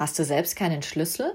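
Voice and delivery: ordinary talk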